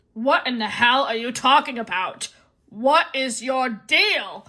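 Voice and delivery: put-on irritated, grumpy voice, thoroughly fed up. Retelling an irritated man's reaction to the speaker, Grinch-like voice. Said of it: "Now I'm sounding like the Grinch".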